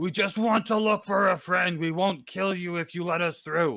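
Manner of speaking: full, loud bugbear voice, hollered out. Ruby at the door yells to whoever is inside, full bugbear voice, yelling loudly. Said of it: "full bugbear voice".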